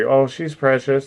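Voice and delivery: said sweetly. Demonstrating how to say something you don't mean, said sweetly. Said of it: "you gotta say it sweet".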